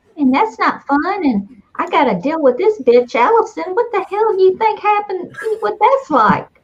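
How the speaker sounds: creepy high-pitched fly voice. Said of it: "this is a really creepy voice".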